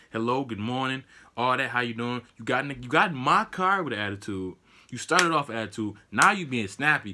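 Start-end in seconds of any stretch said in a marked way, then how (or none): none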